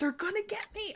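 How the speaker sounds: put-on out of breath, very high-pitched old man voice. Acting out a voice heard in a scene: a very out of breath older man. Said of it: "you hear this like very out of breath, like older kind of man".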